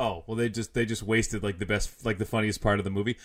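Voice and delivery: ordinary delivery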